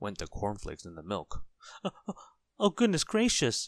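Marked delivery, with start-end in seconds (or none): 2.6-3.7 very high, loud, startled, panicky cry. Hearing the cornflakes crackle, a man dives under the kitchen table, crying out. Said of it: "cried Mr. Jelly, diving under the kitchen table".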